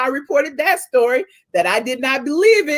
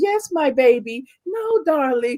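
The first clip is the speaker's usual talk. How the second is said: fake sweet, shady-sounding voice. Imagining Monique lightly throwing shade on the show: imitating Monique's nice-nasty voice. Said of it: "with her nice, nasty".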